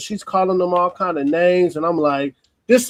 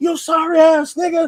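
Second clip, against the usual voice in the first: put-on very high, shrill woman's yell; 10 semitones higher than usual. Retelling what a woman yelled during the scene, imitating the woman yelling. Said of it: "the woman yelling".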